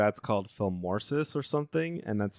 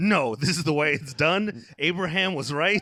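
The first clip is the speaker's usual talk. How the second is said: heated, riled-up, mad, insistent voice, pitched up; 6 semitones higher, 4 dB louder than usual. Describing how Shane reacts whenever he gets mad at the speaker: imitating Shane getting mad. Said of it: "whenever he gets mad at me".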